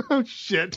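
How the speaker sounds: laughing while speaking. Fumbling a podcast plug and asked to repeat it: giggling while talking. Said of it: "I got the giggles now".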